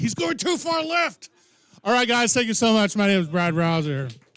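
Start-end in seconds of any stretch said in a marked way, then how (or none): 0.0-1.3 very high, worked-up excited yelling, acted out. Describing a man a foot from the TV, retelling his yell. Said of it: "that's really just what he yells".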